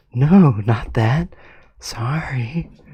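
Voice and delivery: very quiet, very slow yell. Reading a character's yelled line aloud: very quiet yell. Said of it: "That was the quietest yell I've ever heard".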